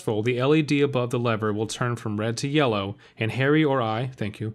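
ordinary delivery

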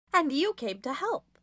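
cheerful, cheery, upbeat tone. Reading a story, the leader replies to another character: cheerful. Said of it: "the leader answers cheerily".

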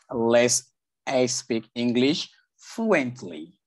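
slow, careful delivery.

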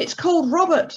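sincere, earnest. Harry answers Henry about the gift, speaking earnestly. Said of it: "Harry said earnestly".

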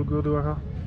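put-on French accent.

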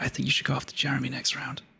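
in a whisper. Telling another player a secret during the vote: whispering. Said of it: "I'm gonna whisper this so only you can hear it".

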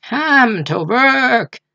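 hoarse, very high snarl with drawn-out "work". Coppelius orders the narrator's father to work, in a hoarse snarling voice. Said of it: "in a hoarse, snarling voice".

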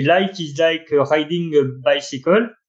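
slow, bad French-accented English.

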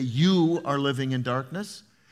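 ordinary talk

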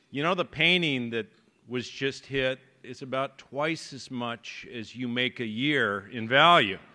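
usual speaking voice

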